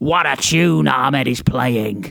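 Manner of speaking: slow, mild yell drawn out word by word. Retelling a match replay, imitating Vince McMahon screaming. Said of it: "Vince can be heard in the background screaming".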